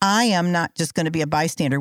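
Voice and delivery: ordinary talk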